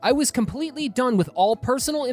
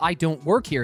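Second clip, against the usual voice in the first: usual speaking voice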